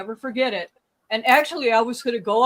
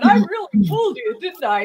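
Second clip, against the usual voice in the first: loud, mock teasing tone through laughter; 5 dB louder than usual. Retelling the speaker's mother pranking them on the phone, imitating her laughing, teasing. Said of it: "she's like laughing".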